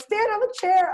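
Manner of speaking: very high, loud shout.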